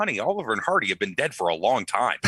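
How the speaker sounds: ordinary delivery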